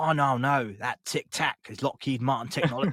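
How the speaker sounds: attempted Australian accent drifting into English accent. Speaker trying an accent he finds hard, attempted Australian accent. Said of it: "that just sounds English".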